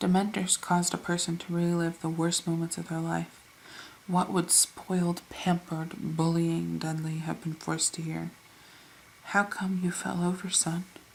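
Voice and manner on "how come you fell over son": careful, bedside-manner voice. Uncle Vernon asks his son Dudley why he fell over, unnaturally quiet. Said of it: "said Uncle Vernon in an unnaturally quiet voice".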